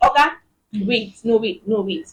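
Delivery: plain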